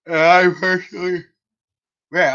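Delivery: slow speech stretched through a yawn. Talking about the 49ers' reputation, yawning while talking. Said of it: "I don't know why I'm yawning so much".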